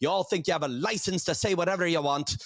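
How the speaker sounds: imitated Irish accent. Retelling what a woman walking by said to comedians: imitating an Irish accent. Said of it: "Irish accent".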